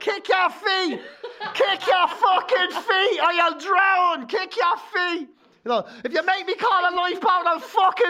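high, drawn-out, acted threatening yell. Retelling parents urging their kids on lilos in the sea: imitating a yelling parent. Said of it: "they just stand there going".

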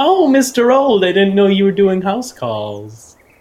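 self-satisfied, needling, loud, high-pitched smug tone. Carol walks up to Dr. Old as he looks over Robert, smug. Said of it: "kind of like smugly walk up and be like".

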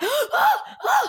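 voice full of panicked shock.

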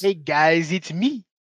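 put-on baby-talk voice with Brooklyn accent. Mocking a reviewer's voice: Video Game Donkey impression. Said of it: "baby talk fucking Brooklyn voice".

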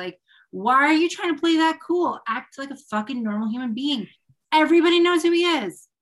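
furious venting outburst. Ranting about someone pretending not to know a celebrity: very angry rant. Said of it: "Sorry, I'm very angry about that".

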